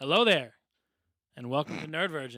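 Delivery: intense, aggressive, forceful delivery. Opening the podcast episode with an aggressive greeting. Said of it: "That was aggressive".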